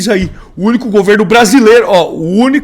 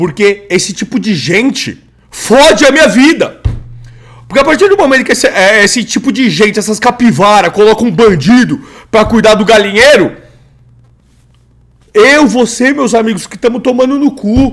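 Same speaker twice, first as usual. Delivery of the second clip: heated, furious, fed-up angry ranting. Reacting to a debate video and complaining about taxes: angry ranting. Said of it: "sabe por que que eu tô puto?".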